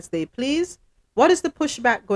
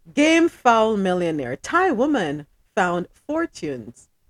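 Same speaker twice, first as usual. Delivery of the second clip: giggling, reading through laughter. Reading a news story aloud to the folks, laughing while reading. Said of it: "I can't even read it without laughing".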